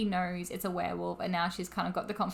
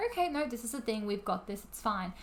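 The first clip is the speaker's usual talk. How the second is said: normal talking voice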